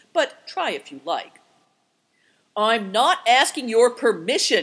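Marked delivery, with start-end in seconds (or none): 2.6-4.7 cried out furiously, shouting. The man answers Affliction, who is holding back the dog, cried out furiously. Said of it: "cried the man furiously".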